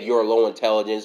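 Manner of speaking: ordinary talk, nothing marked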